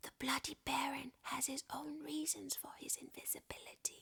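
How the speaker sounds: hoarse, hushed, soft voice. Unseen, he tricks a hovering figure, speaking in a hoarse Bloody Baron voice. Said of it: "in a hoarse voice".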